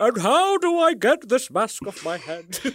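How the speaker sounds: pitch swooping up and down. Imagining an actor caught in a horror-film trap: Ian McKellen voice. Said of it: "just Ian McKellen going".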